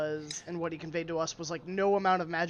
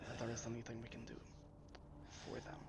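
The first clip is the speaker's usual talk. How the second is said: hushed, breathy whisper with lowered voice; 6 semitones lower, 17 dB quieter than usual. After announcing it mid-conversation, the speaker carries on in a lowered voice. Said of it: "I will lower my voice".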